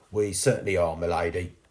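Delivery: ordinary delivery, nothing marked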